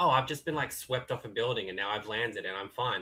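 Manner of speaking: mock cool action hero, offhand and unfazed. Mocking action-movie characters who survive stunts: imitating an unfazed action hero. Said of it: "they don't react in any sort of way".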